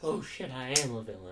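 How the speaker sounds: ordinary talk, nothing marked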